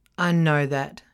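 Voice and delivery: loud, snarling delivery. Paul answering the narrator, snarling. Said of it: "he snarls".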